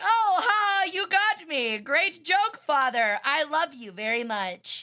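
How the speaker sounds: slow, stilted, wooden line reading. Mocking people who talk like characters in a poorly written fanfic: mocking stilted fanfic dialogue. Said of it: "talk like, uh, like a really poorly written fanfic".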